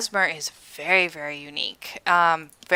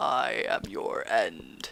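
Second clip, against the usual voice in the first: very deep, very slow, hushed near-whisper; 8 semitones lower, 12 dB quieter than usual. Describing a game boss getting off his throne, voicing him super low. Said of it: "Like, super low".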